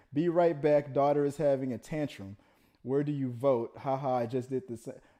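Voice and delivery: ordinary delivery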